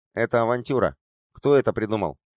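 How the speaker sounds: ordinary delivery, nothing marked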